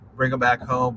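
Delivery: ordinary talk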